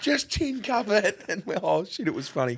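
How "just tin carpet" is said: very high, shrill screamed yell. Telling a footy-trip story about a man with a golf club, retelling a scream across a bar. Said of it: "Screamed at me from across the bar".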